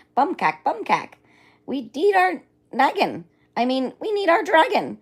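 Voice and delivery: tiny, shrill, very high, very loud swooping squeal. Reading a story aloud, a tiny voice calls out to the father and the dragon, tiny excited scream. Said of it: "a tiny, excited voice scream".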